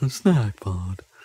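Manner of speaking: mock glum, depressed voice. Describing a game's snack pod pickups, imitating their depressed snack voice. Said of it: "in a really depressed snack kind of voice".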